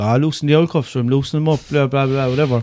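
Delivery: ordinary delivery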